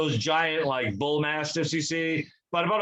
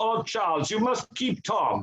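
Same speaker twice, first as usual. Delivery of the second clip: put-on German accent, pitched up; 6 semitones higher than usual. Quoting a woman telling Charles to keep her dog, in a put-on German accent. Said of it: "in that German accent that you just did".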